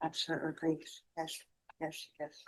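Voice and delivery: very quiet near-whisper, barely audible. Answering the judge from far from the court reporter, speaking too quietly. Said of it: "I can barely hear you".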